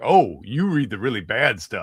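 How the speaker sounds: said with real affection, fond. Retelling Paul Giamatti's remark to Nick: imitating someone speaking affectionately. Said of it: "it was with affection".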